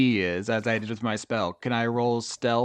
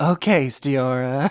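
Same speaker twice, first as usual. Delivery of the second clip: slightly sexy, seductive, sultry voice. Answering in character with a slightly sexier voice. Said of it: "trying a slightly sexier voice".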